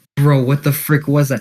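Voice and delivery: ordinary delivery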